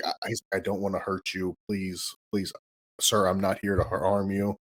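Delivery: mock-tearful pleading. Retelling a gentle movie character's plea, imitating a crying plea. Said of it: "And he's like crying about it".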